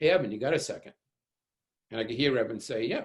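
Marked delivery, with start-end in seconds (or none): 0.0-0.9 acted chummy, pleasant, very friendly easy tone. Recalling a man in a hallway calling someone over, imitating a very friendly voice. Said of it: "in a very friendly voice say".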